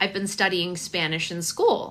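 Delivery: normal talking voice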